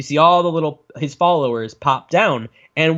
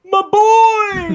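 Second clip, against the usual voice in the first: over-the-top weeping bellow, higher and louder; 4 dB louder than usual. Retelling a film scene where a father bellows over his son: imitating a bellowing, weeping father. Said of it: "bellows like the guy from the Legend of Zelda cartoon".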